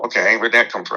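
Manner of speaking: ordinary talk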